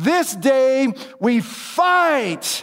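stirring, rousing battle cry, very slow and drawn out. Acting out the close of his speech to his troops before battle, a rousing battle cry. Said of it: "And he gives this moving and strengthening battle speech to his troops just before they're going to go up against their enemies. / Now you have to picture him. He's going back and forth on his horse".

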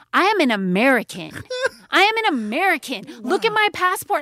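acted, entitled, huffy, high-pitched indignant outburst. Retelling own outburst while waiting, hot and impatient: imitating own entitled outburst. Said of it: "I'm pretty sure I said this".

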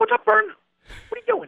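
rapid-fire, very high-pitched chatter. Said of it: "he spoke so fast, and he was so high-pitched voice".

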